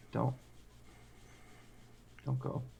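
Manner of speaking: whispered speech. Playing a scene in character as Wes starts crying: whispering. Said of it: "I'm just gonna whisper".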